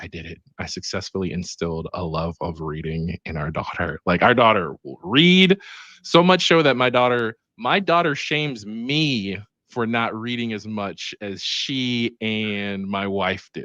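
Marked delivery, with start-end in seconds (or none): 0.0-4.0 hushed, soft, half-whispered stage voice. Retelling what a wife half-whispered on the way to pick up their daughter: imitating someone half-whispering. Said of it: "was whispering to me".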